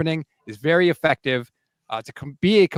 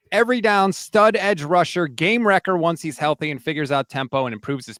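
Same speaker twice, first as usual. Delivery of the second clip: usual speaking voice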